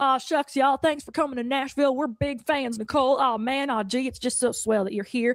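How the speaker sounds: super friendly, eager, charming tone. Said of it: "I got this like super friendly".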